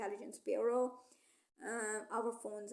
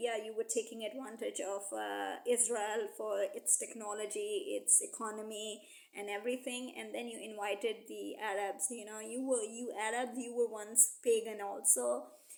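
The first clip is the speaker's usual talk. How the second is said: ordinary talk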